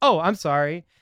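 play-acted, smooth, winning, charming tone. Retelling how a man late to his job answered a woman, mock-charming apology. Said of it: "being all like charming".

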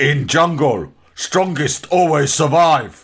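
slow broken English. Retelling a Tarzan episode, imitating Tarzan's closing line. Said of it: "with his hands on his hips going".

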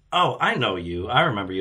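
ordinary talk, nothing marked

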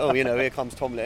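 ordinary delivery

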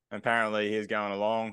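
plain

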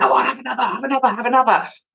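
high, sly, coaxing, tempting devilish voice. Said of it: "his mate that would sit on his shoulder and whisper in his ear".

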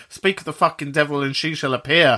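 ordinary talk

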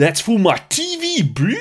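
put-on slow, high, swooping South African accent drawl. Imitating an actor's South African accent from a film. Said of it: "he's doing a South African accent bordering on a very, very interesting Cape Townian accent".

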